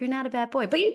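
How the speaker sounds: very gentle, soft hush. Retelling how their dad, just to be funny, spoke to a kid, imitating very gentle speech. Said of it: "very gently saying".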